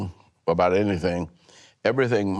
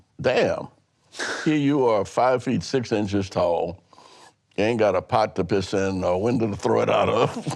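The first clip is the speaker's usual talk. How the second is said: usual speaking voice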